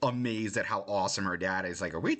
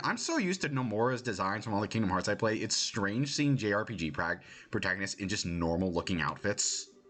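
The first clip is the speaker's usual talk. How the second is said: ordinary delivery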